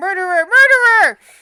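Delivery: high, very loud yell. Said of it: "somebody yelling".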